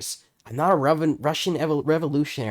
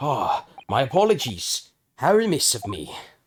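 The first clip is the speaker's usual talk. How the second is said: put-on detective voice with British tone. Voicing a famous detective apologizing for not introducing himself: Herlock Sholmes voice. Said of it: "a bit of the merchant voice, but, like, with British tone in it".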